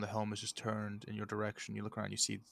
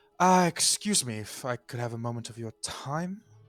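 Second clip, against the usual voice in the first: very loud, raised voice pitched to carry; 2 semitones higher, 9 dB louder than usual. As narrator, voicing a woman addressing the four people left in the pavilion, raised voice. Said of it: "she kind of raises her voice like".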